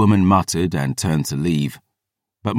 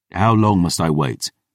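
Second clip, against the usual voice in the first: plain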